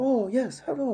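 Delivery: high-pitched, slight put-on Chinese accent in English. Showing how a non-native English speaker with a slight accent sounds: imitating a slight Chinese accent. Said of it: "you have a slight".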